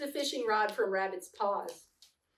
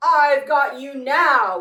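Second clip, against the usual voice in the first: very loud, booming, slow, drawn-out tiger growl; 3 semitones higher, 12 dB louder than usual. Narrating a story, Tiger catching up with Rabbit: growling. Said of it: "he growled".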